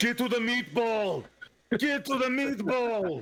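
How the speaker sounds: slow, very high action-star voice. Voicing a figure heard in the darkness: Arnold Schwarzenegger voice. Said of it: "an almost Arnold Schwarzenegger voice in the darkness".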